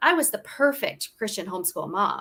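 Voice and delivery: ordinary talk, nothing marked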